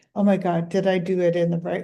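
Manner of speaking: ordinary talk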